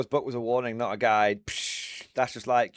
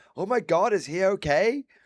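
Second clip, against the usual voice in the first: put-on American accent, very slow, pitched up; 8 semitones higher than usual. Retelling what a woman said when she turned around, in an American accent. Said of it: "I don't know why I said it in an American accent".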